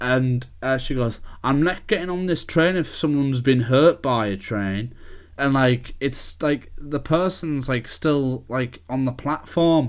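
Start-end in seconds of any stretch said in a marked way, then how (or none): none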